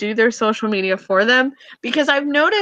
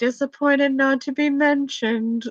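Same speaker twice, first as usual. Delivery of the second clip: deadpan, flat monotone with no inflection. Imitating how a tennis player would say his comment: imitating Andy's deadpan voice. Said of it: "hear him say that in the most deadpan way".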